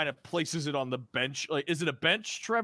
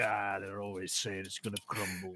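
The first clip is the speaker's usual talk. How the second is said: very low, hushed aside muttered under the breath; 7 semitones lower, 8 dB quieter than usual. Voicing a character answering a girl's joke: muttering under breath. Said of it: "under his breath where she can't hear him".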